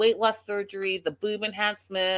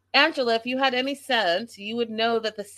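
ordinary talk, nothing marked

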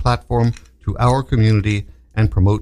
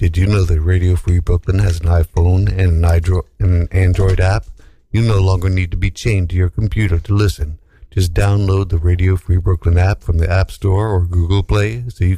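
speaking in a low register; 5 semitones lower than usual. Radio host reading a station app promo on air; low voice. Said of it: "I'm going to do my low voice for this".

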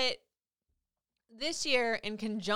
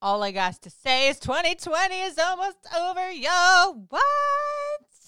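high, loud, excited outburst. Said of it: "Can y'all tell I'm excited?".

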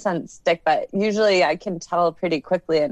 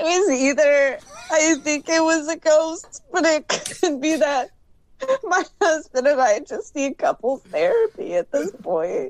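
high-pitched, tearful speech, talking through crying; 9 semitones higher than usual. In an acted scene, someone with a complaining husband answers a question, crying while talking. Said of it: "but you seem to be crying".

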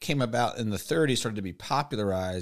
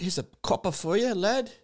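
put-on British accent, pitched very high; 9 semitones higher than usual. Acting out a householder rewarding costumed performers: british accent. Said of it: "I don't know why the British people are there".

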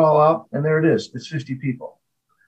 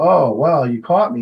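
plain

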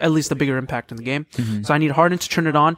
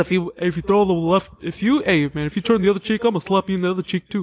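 put-on lisping voice, higher pitch; 4 semitones higher than usual. Imitating Charles Barkley talking about slapping the other cheek: Charles Barkley impression with a lisp. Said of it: "I don't know why I gave him a lisp".

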